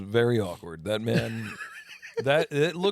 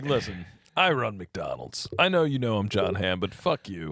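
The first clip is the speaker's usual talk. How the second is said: put-on cool confident voice, lower pitch; 4 semitones lower than usual. Imagining an actor playing the McDonald's CEO in a commercial: Jon Hamm impression. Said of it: "He's be like".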